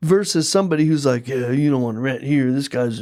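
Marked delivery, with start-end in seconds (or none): 1.3-3.0 put-on grumpy, grouchy voice. Acting out an uncooperative tenant warning people off: imitating a grumpy tenant. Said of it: "Did you like my grumpy voice?".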